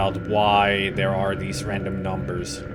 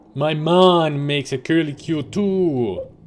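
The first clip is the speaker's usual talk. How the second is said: put-on sudden, slow, higher-pitched Jamaican accent. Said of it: "Suddenly he turned Jamaican".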